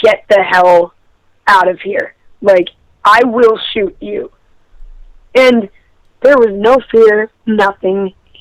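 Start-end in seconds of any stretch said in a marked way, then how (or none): 0.0-4.3 acted-out aggressive, threatening tone. Speaker recounts warning someone off the porch at night, retelling an aggressive threat. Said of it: "I basically said in a very aggressive voice".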